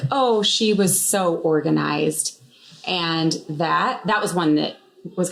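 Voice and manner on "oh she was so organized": ordinary talk, nothing marked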